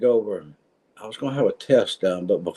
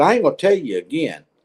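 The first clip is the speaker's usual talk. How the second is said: raised, pitched-up, scolding voice; 6 semitones higher, 3 dB louder than usual. Retelling telling a nurse to stop: retelling raising his voice. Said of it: "I raised my voice at her".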